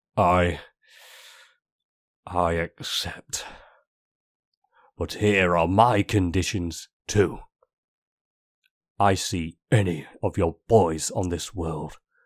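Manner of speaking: words pushed out through clenched, gritted teeth. Reading a story, a character stands to answer an opponent: through gritted teeth. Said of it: "[name] stands and grits his teeth".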